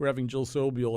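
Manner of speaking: plain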